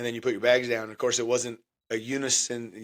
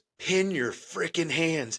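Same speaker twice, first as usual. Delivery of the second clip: angry, mad, pitched-up half-whisper; 5 semitones higher, 3 dB quieter than usual. Retelling a drill instructor coming up behind him, retelling an angry half-whisper. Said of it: "that mad whisper into your ear".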